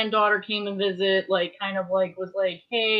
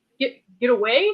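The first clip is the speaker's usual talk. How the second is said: halting, stumbling stammered repeat on "get"; 4 semitones higher, 4 dB louder than usual. Retelling own startled reply, stuttering: imitating own stutter. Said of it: "stuttered a little bit".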